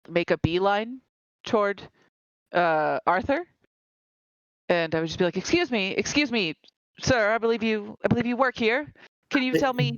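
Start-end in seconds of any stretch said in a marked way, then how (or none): 5.4-10.0 loud raised voice, pitched higher. Playing a character asking a library worker for help: raised voice. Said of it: "there's no need to raise your voice now".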